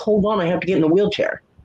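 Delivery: mild voice called out from another room. Retelling calling out to a delivery driver from inside the house: retelling own yell. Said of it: "I was yelling from in the house".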